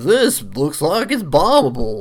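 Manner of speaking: slow, drawling backwoods hillbilly voice. Quoting what Link says on finding an odd rock: Link hillbilly voice. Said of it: "Link's, like, hillbilly voice".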